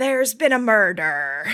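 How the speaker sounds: loud put-on pirate accent. Taking a turn at saying lines in accents, speaker retries a phrase, in a pirate accent. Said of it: "I'm in character now".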